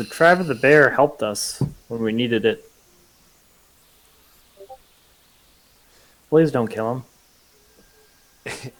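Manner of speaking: in a low tone. Player speaks in character to the opponent, in a low tone. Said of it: "I'm gonna like in low tone say".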